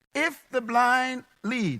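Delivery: very slow, deliberate, repeated delivery.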